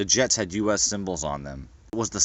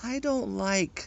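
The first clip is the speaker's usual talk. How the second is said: very high, lazy, swooping, sing-song voice; 12 semitones higher, 6 dB quieter than usual. Narrator reads the captain lazily replying to the supervisor, in a high voice. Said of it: "the captain replies in a high voice".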